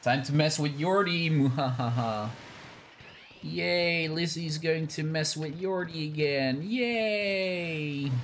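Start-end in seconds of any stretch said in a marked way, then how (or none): 3.4-8.1 fake excitement, much higher, slower. Playing a game, the speaker cheers for Lizzie's sake: fake excitement. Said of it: "Did I sound excited enough, Lizzie? ... Why do you sound terrified?".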